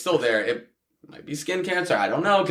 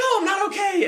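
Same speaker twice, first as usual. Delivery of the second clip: very high-pitched, shaken voice shooting up. Retelling being shot and asked if okay: imitating own high-pitched voice. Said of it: "my voice was so high".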